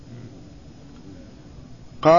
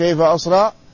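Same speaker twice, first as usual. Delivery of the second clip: ordinary talk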